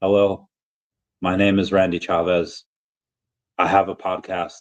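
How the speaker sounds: super flat, droning monotone with no inflection. Recalling a drunken self-introduction: super monotone voice. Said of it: "it was this super monotone voice".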